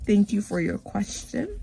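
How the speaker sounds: put-on formal schoolteacher voice. Answering the same questions over and over, in a put-on teacher voice. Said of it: "I had to put on my teacher voice".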